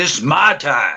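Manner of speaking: forceful, loud, high, powerful delivery. Asked on the show to say the line with power in the voice. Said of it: "say it with power in your voice".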